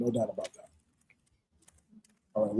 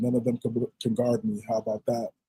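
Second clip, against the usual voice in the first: ordinary talk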